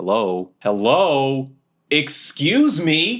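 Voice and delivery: very slow, high, drawn-out, fed-up sing-song calling. Voicing a character with hands on hips, foot tapping: impatient and annoyed. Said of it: "hands on my hips, my foot is tapping".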